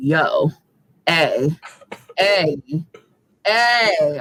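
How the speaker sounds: very slow, demanding cat voice, each "ay" drawn out. Voicing the cat when she is ready to eat: imitating a vocal cat demanding food. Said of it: "She's very vocal".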